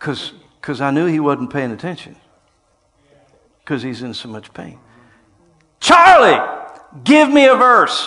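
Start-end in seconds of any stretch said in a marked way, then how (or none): 5.8-8.1 acted screaming, higher and louder. Retelling calling to a man in great pain: retelling a scream. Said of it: "I screamed at him".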